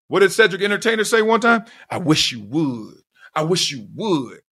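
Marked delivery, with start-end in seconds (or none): 1.9-4.2 slow, drawn-out, daring, threatening tone. Daring someone to test them, the speaker quotes Cedric the Entertainer, imitating Cedric the Entertainer's threat. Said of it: "Almost said it in that tone".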